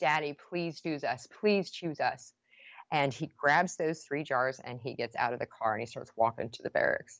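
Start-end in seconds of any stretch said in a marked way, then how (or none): 0.0-2.3 play-acted tearful, crying, begging child's voice. Retelling how her kids in the back seat begged their dad, imitating kids crying and begging. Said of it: "crying and begging".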